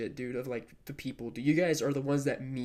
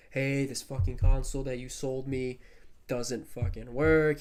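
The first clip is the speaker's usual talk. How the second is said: ordinary talk, nothing marked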